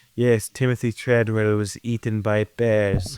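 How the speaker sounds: documentary narrator voice-over delivery. Imitating a documentary monologue: Werner Herzog documentary voice. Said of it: "He's doing the voice of, like".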